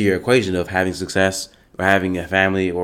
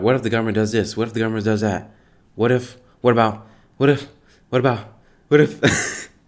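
put-on worried, overwrought, anxious, stressed-out fretting; 3 semitones higher than usual. Imitating people who worry about what the government will do: imitating stressed people. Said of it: "legit stressed the fuck out".

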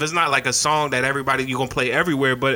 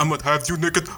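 made-up, put-on Eastern European accent. Joking in a group conversation, put-on accent. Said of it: "What is that accent?".

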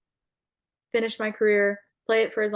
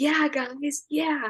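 high, sarcastic cheering. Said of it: "totally sarcastically".

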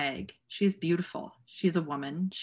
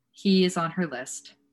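plain reading voice

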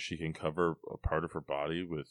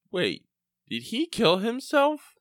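put-on very high, very loud, adorable little-girl voice; 9 dB louder than usual. Retelling what a little girl asked, the speaker imitates her innocent little-girl voice. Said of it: "most innocent thing i've ever heard".

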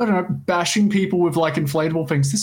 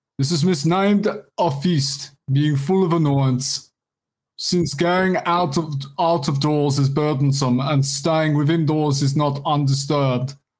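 fake South African accent, read aloud. Reading aloud a quote from someone mad about Saturnalia: put-on South African accent. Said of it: "Sorry for the South African accent".

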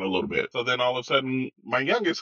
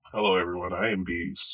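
downcast, depressed tone; 6 semitones lower than usual. Co-host introduces themself at the start of a show episode, sounding depressed. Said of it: "You sound so depressed right now".

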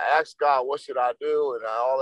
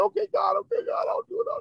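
sobbing, pleading, giving in; 3 dB quieter than usual. Retelling answering God while crying uncontrollably: retelling a tearful plea. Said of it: "And I'm crying again uncontrollably".

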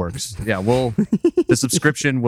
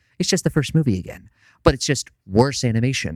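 put-on manic character voice. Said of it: "I got a little jokery there".

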